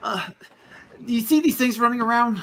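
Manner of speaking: put-on voice of a boy about fifteen. Voicing a fifteen-year-old boy who stops to look at adventurers: teenage boy character. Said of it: "a young boy about fifteen".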